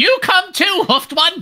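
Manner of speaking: very high-pitched put-on goblin creature voice. A storyteller voices a goblin character in the scene, goblin voice. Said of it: "those different goblin voices I have".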